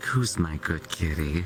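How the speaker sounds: mock sultry, seductive tone, low cooing. Retelling what she says to him whenever she walks in, mock-seductive tone. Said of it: "in that seductive tone".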